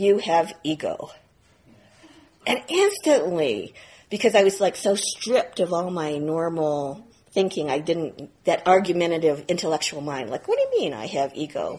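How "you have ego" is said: put-on dry, matter-of-fact delivery with no feeling. Speaker retelling what a teacher said to them, in a completely flat tone. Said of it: "in this completely flat tone of voice".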